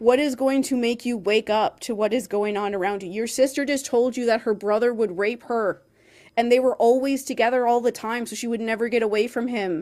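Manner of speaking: loud, exasperated, frustrated screaming. Recalling frustration reading a book's chapters, retelling a scream at a character. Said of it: "I was just screaming like".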